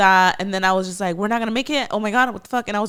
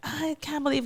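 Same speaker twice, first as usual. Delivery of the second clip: mock tearful screaming, higher pitch; 6 semitones higher, 8 dB quieter than usual. Retelling a silly fight at home: imitating own screaming and crying. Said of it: "screaming and crying".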